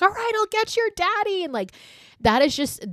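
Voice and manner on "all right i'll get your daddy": mock frustrated, fed-up scream, very high. Retelling a film scene where a frantic mother screams at her son: imitating a mother screaming. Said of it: "She screams at Tad".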